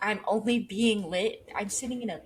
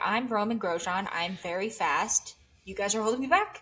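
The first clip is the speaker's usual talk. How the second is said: usual speaking voice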